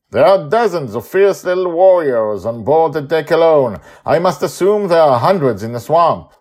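very loud, very high, pompous, self-important superhero voice. Narrating a story, Cosmic Condor answers Susie in a pompous superhero voice. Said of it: "in his pompous superhero-like voice".

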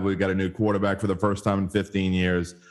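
ordinary delivery

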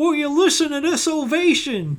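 very high-pitched commentator voice calling out. Recalling a commentator's line during a crowd ovation: Jim Ross impression. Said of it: "did you hear Jim Ross go".

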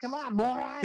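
put-on Boston-Illinois-ish accent. Retelling a salty mustached character's catchphrase: Boston-Illinois-ish accent. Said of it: "kind of a Boston slash, I don't know, Illinois-ish accent".

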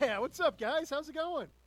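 happy, in a good mood. Greeting the others after being introduced as Angry Man, happy. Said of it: "you sound happy this week".

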